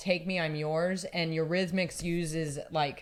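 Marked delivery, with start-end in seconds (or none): none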